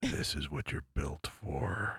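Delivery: whispering. Acting out a line said while grabbing a partner's neck: whispering. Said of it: "I whisper in your ear and I'm like".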